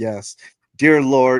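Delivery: haughty, talking-down delivery. Retelling an animated scene's mock prayer: imitating Trevor, condescending. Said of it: "he's being very condescending".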